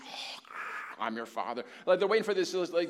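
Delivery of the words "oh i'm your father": mock dramatic god voice, lower pitched. Mocking how people expect God to sound: put-on shaky, dramatic King James voice. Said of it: "this shaky King James".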